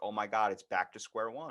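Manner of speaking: normal talking voice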